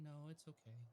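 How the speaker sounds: defeated, dejected, beaten-down sound. Declining to speak at a council meeting, sounding defeated. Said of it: "Don't sound so defeated".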